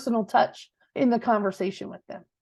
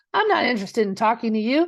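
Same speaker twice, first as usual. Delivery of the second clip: usual speaking voice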